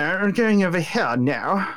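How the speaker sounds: slow, lofty, snooty posh drawl. Speaker imitates how a talking pteranodon character sounds, mock-snobby pteranodon voice. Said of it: "that's how he sounds".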